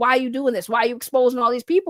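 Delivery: ordinary talk, nothing marked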